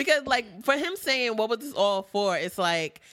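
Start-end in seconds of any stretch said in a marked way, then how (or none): none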